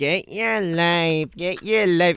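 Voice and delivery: grating, whiny, high, drawn-out voice. Imitating a girl from high school saying her tagline, in a grating whiny voice. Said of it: "whiny voice you've ever heard".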